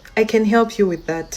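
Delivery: coldest possible voice, chilly and frosty. Retelling how the youngest girl answered the customer: imitating a cold voice. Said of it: "in the coldest voice possible".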